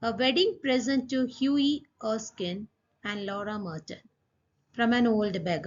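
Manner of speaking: ordinary delivery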